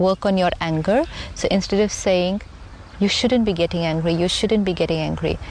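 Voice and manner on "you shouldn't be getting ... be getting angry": normal talking voice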